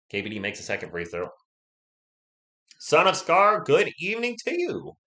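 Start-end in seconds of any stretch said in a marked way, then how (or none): 2.7-4.9 high, loud voice climbing higher and higher. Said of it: "My voice just went up and up".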